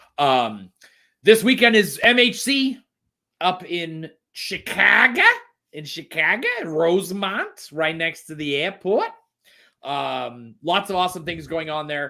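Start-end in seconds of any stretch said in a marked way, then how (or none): 1.3-12.1 Minnesota upper Midwest accent, slow and high. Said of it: "Why are you talking like you're from Minnesota?".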